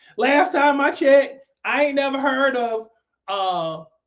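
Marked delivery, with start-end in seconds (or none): none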